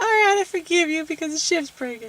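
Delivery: high, put-on, forgiving mock heroine voice.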